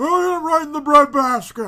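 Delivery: put-on voice, shrill, very loud, high belted shout. Answering a request to do Monsoon's voice: Monsoon voice. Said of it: "The real Monsoon here".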